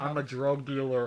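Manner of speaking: slow, loud, altered disguised voice. Imitating the disguised voice on a masked celebrity show: imitating a disguised tv voice. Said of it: "they disguise the voice, like".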